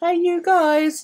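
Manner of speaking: very high, called-out voice. Quoting a film line as a Goonies reference: Goonies impression. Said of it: "Goonies reference".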